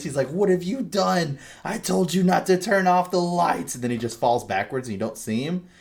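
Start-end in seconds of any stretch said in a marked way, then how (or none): 0.3-3.7 shrill, very high, screamed delivery. Retelling a game character jumping on a countertop at the player: imitating a character screaming. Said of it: "he starts screaming at you".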